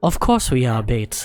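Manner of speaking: put-on British English accent. Quoting Astrid's line about being bait, British English accent. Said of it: "like English British accent".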